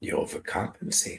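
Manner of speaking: soft, motherly voice.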